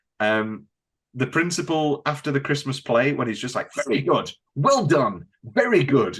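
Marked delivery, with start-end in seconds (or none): 3.9-6.2 gushing, very enthused, swooping, enthusiastic voice. Recalling the principal after the Christmas play: imitating an enthused principal. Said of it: "very, very enthused".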